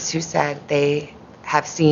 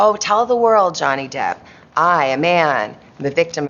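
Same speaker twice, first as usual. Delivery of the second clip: ordinary talk, nothing marked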